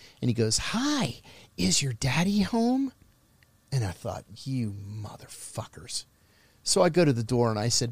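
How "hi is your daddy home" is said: mock syrupy, high, slow, sweet-as-candy voice. Retelling what a man at the door said to his son, imitating a sugary sweet voice. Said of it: "this sugary, sweet voice".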